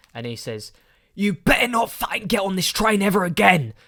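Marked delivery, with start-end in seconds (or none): 1.2-3.7 raging yell at full volume, loud and high. Telling how an angry man on a train yelled at Paul, retelling a furious shout. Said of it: "Still shouting at the top of his voice".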